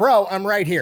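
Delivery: put-on laid-back manly man voice. Retelling a story, the speaker acts out a man's reply to a nun, putting on a man voice. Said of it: "using his man voice".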